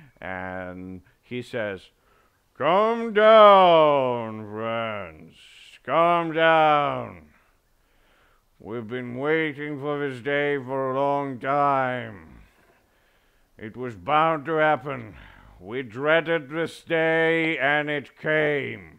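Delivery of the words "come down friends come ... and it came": stately, grand proclaiming delivery, drawn out, falling. Narrating a scene as the crowd quiets, the speaker voices a figure in a loud booming voice. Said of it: "a very loud, booming voice".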